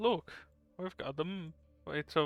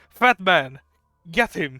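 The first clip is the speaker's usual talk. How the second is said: very loud yelling in a put-on character voice; 2 semitones higher, 10 dB louder than usual. Entering downstairs as a character, calling to an ally: yelling in character. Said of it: "I yell out".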